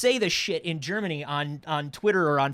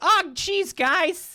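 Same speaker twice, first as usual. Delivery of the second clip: put-on timid child voice, pitched higher; 14 semitones higher, 4 dB louder than usual. Picturing Bing as a little kid being picked on: meek little kid voice. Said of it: "a little Archie thing. Where he's just like".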